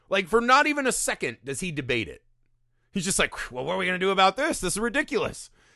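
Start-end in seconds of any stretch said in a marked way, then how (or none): 3.5-5.4 mock casual, nonchalant, unbothered, matter-of-fact tone. Retelling how a character instantly accepts the story: imitating a nonchalant reaction. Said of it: "they're so nonchalant about everything".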